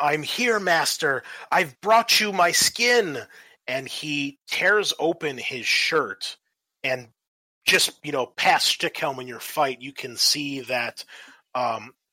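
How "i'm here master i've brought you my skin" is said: high, loud, screamed fanatic cry. Voicing a scrawny cultist who runs in to greet his master: screaming. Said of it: "you hear him scream".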